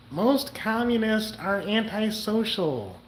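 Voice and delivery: affected, put-on woman's voice. Quoting what she said in a video: Terry impression. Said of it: "That's how Terry talks. That's the best Terry impersonation you'll get from me".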